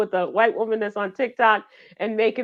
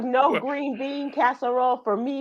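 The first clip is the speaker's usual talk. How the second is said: ordinary talk, nothing marked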